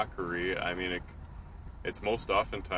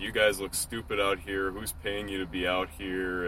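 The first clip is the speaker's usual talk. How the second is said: ordinary talk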